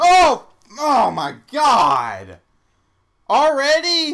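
shrill, swooping, drawn-out, very loud startled shriek. Player in a zombie game, caught off guard by an unseen zombie, screaming in fright. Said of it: "Sorry if I screamed".

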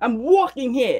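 shaky New York accent. Speaker tries the line again to learn the accent, attempted New York accent. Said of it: "Is that how you say it?".

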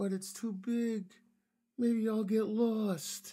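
very timid, very high, small piping voice. Narrator reading Dinosaur clinging to the school fence, in a very timid Dinosaur voice. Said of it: "said in his very timid dinosaur voice".

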